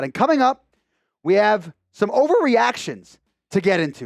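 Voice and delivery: breaking voice that cracks partway through. Speaker teeing up the next segment for listeners, with a voice crack. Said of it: "Great voice crack by your boy right there".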